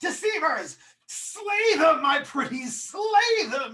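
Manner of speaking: loud, high, drawn-out commanding yell. Voicing a villain ordering her minions to attack: character yelling. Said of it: "she yells".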